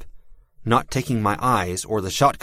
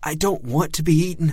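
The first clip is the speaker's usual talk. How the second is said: trembling, quavering, badly shaking high voice; 8 semitones higher than usual. Evan, told to stay close, answers the narrator; voice shaking badly. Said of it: "his voice shook a lot more".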